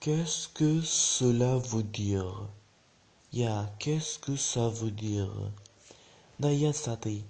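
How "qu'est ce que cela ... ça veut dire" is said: very slow, drawn-out French with careful repetition. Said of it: "ګورئ، چې لږ فرق ده پکې".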